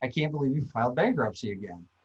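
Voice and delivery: put-on muttering under the breath. Retelling what someone muttered in the conference room: imitating muttering under breath. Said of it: "mutter under his breath".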